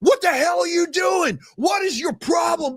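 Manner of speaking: put-on, very high-pitched, outraged, furious screaming. Retell hearing a voice from the parking lot while walking up the hill, imitating Murph screaming. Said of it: "I heard Murph's voice screaming".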